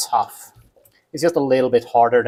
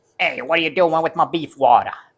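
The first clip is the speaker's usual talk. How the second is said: bad, exaggerated, laid-on New York accent; 4 semitones higher than usual. Joking about a phrase, the speaker slips into a bad new york accent. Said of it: "Why did I turn into like a bad New York accent?".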